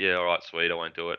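plain

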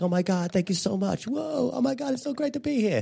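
put-on unhinged, over-the-top American accent, very high pitch. Retelling going up and thanking everyone, in an over-the-top american accent. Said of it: "did an American accent and went like really mental".

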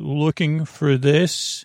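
forceful, powerful, commanding warrior voice. Narrating an adventure, voicing a big warrior stepping out: powerful voice. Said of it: "a powerful voice say".

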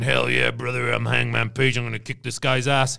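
put-on aggressive, assertive tone. Retelling a wrestler's scowling promo: imitating an aggressive assertive tone. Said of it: "very aggressive in his tone and he's very assertive".

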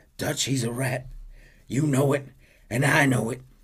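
hoarse, high begging voice. Narrator reading Arthur's last desperate plea to his mentor Dutch: Arthur rasping out a plea. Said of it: "He rasps out".

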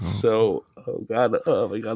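very slow, tearful, choking up, near tears. Retelling the day a grandpa died, choking up with tears. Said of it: "The tears are coming back".

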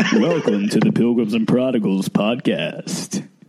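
big put-on announcer voice.

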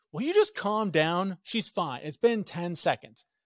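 exasperated, fed-up outburst. Recounting replying to a woman yelling at someone: retelling own outburst.

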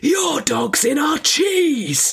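very high, very loud, full-volume shout. Speaker retells calling out at a family picnic when a dog raided their cheese; retelling a loud shout. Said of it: "in my not inconsiderable loudest voice".

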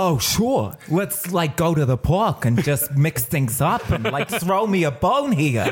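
put-on talking dog voice with Brooklyn accent. Asked how Buddy the dog would talk, the speaker answers in Buddy the dog Brooklyn accent. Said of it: "he had a Brooklyn accent, how would Buddy the dog talk?".

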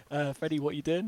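ordinary talk

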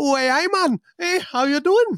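put-on Geordie accent. Joking about not sounding like someone from Newcastle, putting on a Geordie accent. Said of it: "with that accent".

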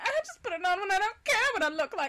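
affected, very high-pitched put-on voice. Reading a character's line aloud for the others, Myrtle voice. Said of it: "Your Myrtle voice sounds like Blanche".

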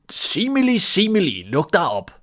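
loud, high, swooping, drawn-out shout. A man who forgot the mountain's name calls to it, shouting. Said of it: "råbte han".

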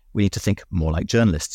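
ordinary delivery

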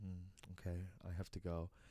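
very slow, airy, breathy, hushed, drawn-out voice. Retelling a film scene where a character leaves: imitating a breathy character. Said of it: "very breathy".

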